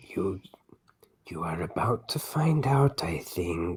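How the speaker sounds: whispering character voice. Karak replies to the group, Karak whispering. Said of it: "Karak whispers".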